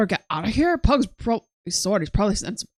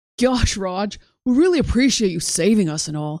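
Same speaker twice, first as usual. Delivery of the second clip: deliberate put-on Californian accent. Playing the two rescued guys thanking Raj, in a Californian voice. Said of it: "This is just the Californian voice I can do".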